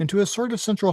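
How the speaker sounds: plain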